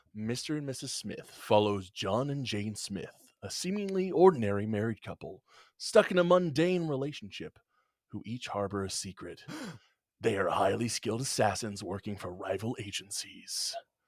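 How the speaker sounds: movie trailer narrator voice. Asked to read the film synopsis aloud, speaking in a movie theater voice. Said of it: "movie theater voice".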